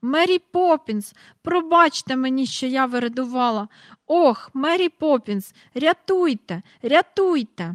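screaming, crying out. Reading a children's story, a girl screams for help. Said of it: "І враз вона закричала".

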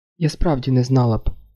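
ordinary delivery

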